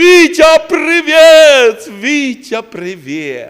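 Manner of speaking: very loud, very slow shout, привіт stretched out. Telling a listener how Christ will greet him from afar, retelling a shouted greeting. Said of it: "як ти до мене закричав".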